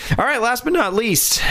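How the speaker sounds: voice cracking mid-phrase. Moving on to the last item in a two-person discussion; voice cracking. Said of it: "my voice just cracked a little".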